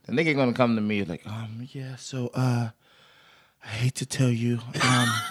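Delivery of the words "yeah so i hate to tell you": very slow, halting, hedging half-whisper. Retelling what the man walking around at the pedicure place said: imitating someone half-whispering. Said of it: "he's whispering with his hands behind his back".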